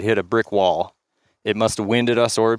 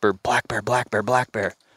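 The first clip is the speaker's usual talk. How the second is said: whispered delivery. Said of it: "and I whisper".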